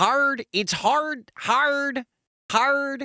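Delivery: put-on Chicago accent. Thanking a viewer for a Christmas card sent to Australia: put-on Chicago accent. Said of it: "hard to say Australia in an accent that's not Australian".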